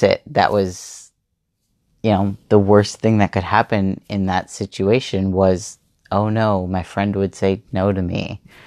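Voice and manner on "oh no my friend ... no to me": usual speaking voice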